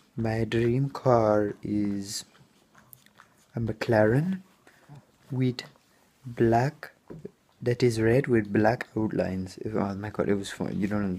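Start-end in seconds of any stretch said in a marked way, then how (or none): 0.2-9.6 slow, comic, put-on Indian accent. Retelling what a new coworker said about his dream car: imitating an Indian accent. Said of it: "I'm gonna imitate him".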